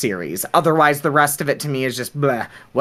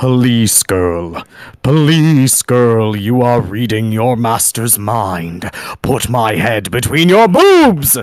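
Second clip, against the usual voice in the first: deep, booming villain voice at bottom of range; 4 semitones lower, 5 dB louder than usual. Showing off the voice he can do, super deep Alucard voice. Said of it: "a super deep voice".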